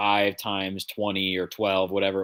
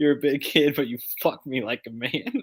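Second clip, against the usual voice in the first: high, voiced, leaned-close little stage whisper; 5 semitones higher than usual. Retelling a moment from the episode, imitating Nany half-whispering. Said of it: "didn't she give him a little whisper".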